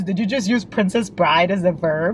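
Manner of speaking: plain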